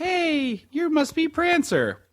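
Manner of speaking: put-on girl's high, wide, sweet voice.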